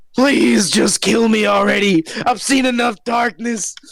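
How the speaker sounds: loud, very high growl of pain. A game master voicing a character speaking to a player, growling in pain. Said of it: "he growls out in pain".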